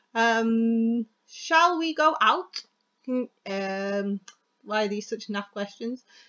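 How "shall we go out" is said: rising, question-like pitch on "out". Speaker demonstrating how to mark a spoken question: rising pitch on last word. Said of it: "the last word should be a little bit higher".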